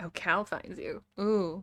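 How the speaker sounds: ordinary delivery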